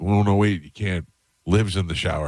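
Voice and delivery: ordinary talk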